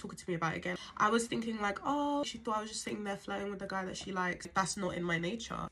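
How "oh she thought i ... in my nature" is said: normal talking voice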